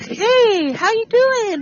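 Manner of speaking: sweet voice, very high, slow and drawn out. Acting out answering a phone call after yelling: imitating a sweet phone voice. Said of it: "Like that voice".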